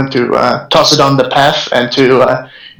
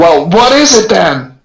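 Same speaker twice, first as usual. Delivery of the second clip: high-pitched mild half-scream; 6 semitones higher than usual. Player voicing Jason as he grabs his crossbow, screaming. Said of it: "and he screams".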